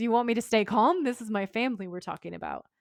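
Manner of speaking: ordinary delivery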